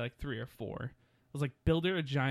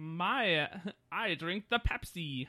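put-on cartoon villain voice, pitched higher; 4 semitones higher than usual. Joking about superhero soda ads, the speaker does a Mark Hamill Joker impression. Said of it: "my Mark Hamill trying to do the Joker impression".

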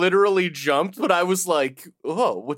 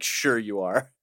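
put-on condescending voice; 9 semitones lower, 6 dB quieter than usual. Discussing an episode, quoting Miss Minutes mock-condescending. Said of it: "Miss Minutes is like real condescending about it".

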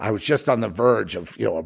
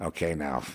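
put-on near whisper, lower and quieter; 5 semitones lower, 9 dB quieter than usual. Retelling a scared friend's warning: imitating Rick Fry almost whispering. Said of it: "he almost whispering to me".

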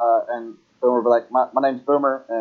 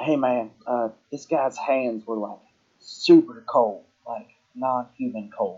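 secretive, leaning-in half-whispered aside; 4 dB quieter than usual. A character sits down next to a companion and leans over; leaning over and half-whispering. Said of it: "lean over and whisper".

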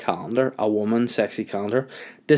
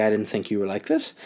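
put-on emotional voice, almost crying. Retelling what an emotional woman said to them, imitating someone almost crying. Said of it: "like almost crying".

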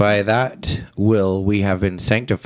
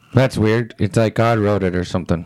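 usual speaking voice

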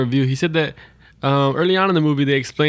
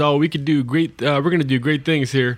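ordinary talk

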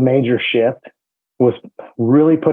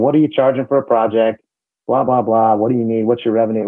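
ordinary talk, nothing marked

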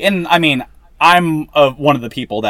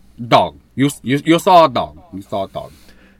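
slow, drawn-out mutter; 2 semitones lower than usual. Echoing another speaker's story line as Al Pacino in Scarface. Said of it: "Al Pacino and Scarface impersonation".

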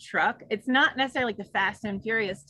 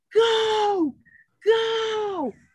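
mock very high, eager, stretched-out excited yelling; 11 semitones higher, 4 dB louder than usual. Telling a story, the speaker quotes the toll booth guy: retelling an enthusiastic scream. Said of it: "And he's screaming".

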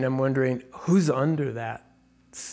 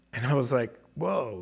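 ordinary talk

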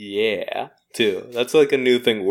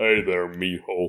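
very low, deep voice; 4 semitones lower, 4 dB quieter than usual. Coaching someone how to greet Miho, showing the line: low voice. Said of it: "Your voice lower".

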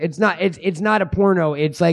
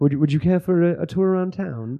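butchered, clumsy, put-on British accent. Acting out an older English gentleman greeting a visitor: bad British accent. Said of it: "me slaughtering a fucking, uh, a British accent".

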